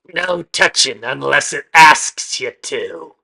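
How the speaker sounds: very loud croaking call. Voicing someone calling from the back of a shop as players enter, croaking. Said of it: "kind of croaking from the back".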